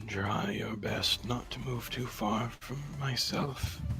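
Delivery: low-key, quiet, soft-spoken murmur. Speaking in character to Everin, asking her to stay close: speaking quietly. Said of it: "just quietly say".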